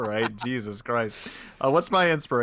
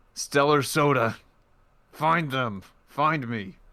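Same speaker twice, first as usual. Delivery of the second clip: forced out through gritted, clenched teeth; 3 semitones higher than usual. Acting out a campaign character's line, spoken between clenched teeth. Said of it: "He will just say between clenched teeth".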